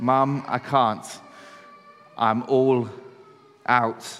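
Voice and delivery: mock worn-out, very slow, drawn-out tired voice. Retelling what a middle child said to Mum: imitating Isaac, very tired. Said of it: "in a very tired voice".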